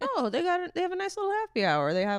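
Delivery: very high-pitched, loud voice. Quoting a dad's phrase about happy hour, imitating a dad's voice. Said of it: "That's how he says it".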